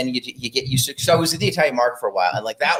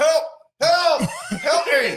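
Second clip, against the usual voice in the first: mock, fake pleading voice while smiling, higher. Acting out a victim calling for help during a robbery: mock cry for help while smiling. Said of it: "you're just smiling the whole time".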